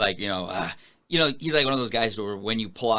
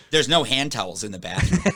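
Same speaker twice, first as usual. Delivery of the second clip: ordinary delivery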